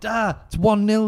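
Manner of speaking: acted-out high, loud calling shout. Retelling calling to dad in the toilet about a goal: retelling own shout. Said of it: "I shouted".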